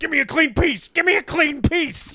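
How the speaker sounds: shrill, very high-pitched, hard repeated yelling. Interjecting a favorite movie line during the conversation: yelling Brian Dennehy impression. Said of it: "Brian Dennehy yells that".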